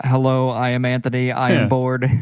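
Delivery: robotic, monotone robot voice. Recalling their pre-recording test, done in a robot voice. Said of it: "Continue the robot".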